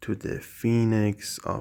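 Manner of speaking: plain reading voice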